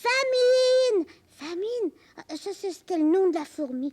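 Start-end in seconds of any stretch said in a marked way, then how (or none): 0.0-1.9 loud, high-pitched crying out. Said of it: "elle a crié".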